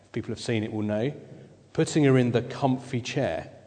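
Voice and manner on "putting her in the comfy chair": ordinary delivery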